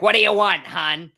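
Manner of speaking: curt, indifferent Philly voice. Retelling a cheesesteak shop lady's attitude: imitating a curt philadelphia server. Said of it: "total Philadelphia service, where she's like".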